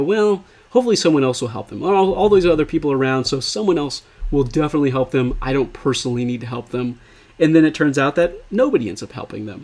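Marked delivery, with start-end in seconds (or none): none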